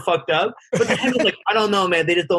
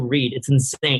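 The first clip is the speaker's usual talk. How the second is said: plain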